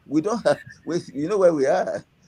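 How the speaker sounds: speaking through laughter. Speaker discussing who the president appoints, apologizes for laughing; laughing while talking. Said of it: "I'm sorry, I'm laughing".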